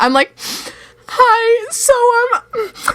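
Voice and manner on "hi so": mock crying, higher. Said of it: "I'm crying".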